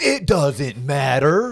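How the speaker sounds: very loud, booming, belted celebrity voice. Answering a question about mortgage interest rates: The Rock impression. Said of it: "can I do my best rock impress-, um, impersonation".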